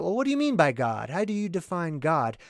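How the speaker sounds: ordinary delivery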